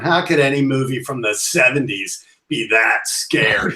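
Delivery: put-on dismissive teenager voice. Retelling what teenage girls said to older men, imitating dismissive teenagers. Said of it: "they were rolling their eyes at the old guys".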